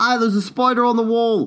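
fake Aussie accent, slipping. Joking about spiders in Australia versus Canada, a bad Australian accent. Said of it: "wait, that's not Australian".

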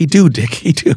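put-on high, slow, broken old-country Irish English. Retelling a grandmother stepping in for a child: imitating grandmother's old irish english. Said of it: "She had this old Irish kind of English".

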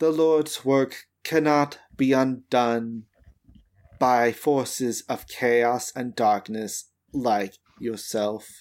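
flat, level monotone with unvarying intonation. A game master voices a figure who catches the player's fire arm, monotone. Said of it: "in the same monotone voice".

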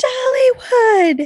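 sudden, shrieked, very high-pitched yell. Retelling a show scene where a character yells their safe word: imitating a yell. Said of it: "she yells".

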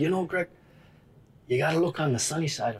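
put-on thick Norwegian accent. Greg quotes Abner's answer to his question, in Abner's thick Norwegian accent. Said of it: "he's very thick norwegian accent".

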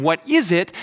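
put-on holler, as if from another room. Retelling a son's reply from his bedroom: imitating son yelling. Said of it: "he yells down from his bedroom".

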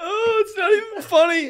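very high, loud speech through laughter. Unable to stop laughing while trying to introduce the week's topic: laughing while talking. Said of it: "I don't even know why we're laughing".

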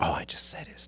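soft, quiet whispered delivery.

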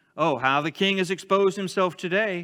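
openly sarcastic, ironic delivery. Showing how she would have said it to the king, sarcastic tone. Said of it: "say this in your head with a sarcastic tone".

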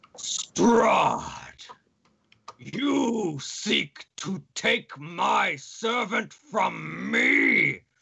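booming angry voice with a rough edge. Narrating to the players, a voice booms down from the darkening sky: booming angry voice. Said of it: "a voice booms through the air above you".

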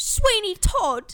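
very loud, very high attempted Cockney accent. A podcaster who says they can't do accents tries one: attempted Cockney accent. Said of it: "Is that how you do your Cockney?".

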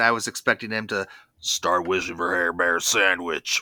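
very low, deep cartoon bear voice. Discussing how Frankie's voice reiterates an earlier one, slip into a Square Bear voice. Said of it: "That's a good imitation".

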